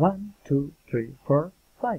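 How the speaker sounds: rising tone at the end of each number. An english intonation lesson counting one to five as an example: rising list intonation. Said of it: "Enumerating rising intonation".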